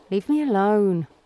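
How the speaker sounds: worn-out, drained, dismissive tone. Narrator reading a woman's reaction to her buzzing phone, Claire muttering wearily. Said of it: "Claire muttered wearily".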